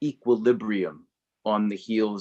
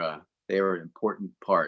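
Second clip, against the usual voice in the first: ordinary talk, nothing marked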